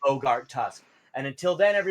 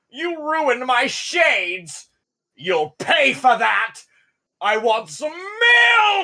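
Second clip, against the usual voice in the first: very slow, loud, swooping, drawn-out ogre scream; 8 semitones higher, 8 dB louder than usual. Voicing an ogre who just took massive damage: ogre screaming. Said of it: "he kinda just screams out".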